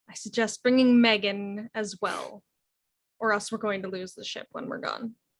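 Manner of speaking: quiet, hushed under-the-breath murmur. In a role-play, floating past the others to speak to them: hushed tones. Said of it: "speak in hushed tones".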